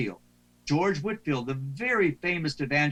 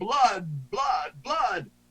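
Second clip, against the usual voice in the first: play-acted, pitched-up revivalist preacher's cry, repeated; 5 semitones higher than usual. Explaining going from a natural tone to full volume: retelling George Whitefield's bull roar. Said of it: "to a bull roar".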